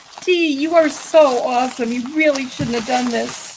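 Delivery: crying, tearful voice, talking through tears. Thanking Dee, speaker talks while crying. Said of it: "I'm crying".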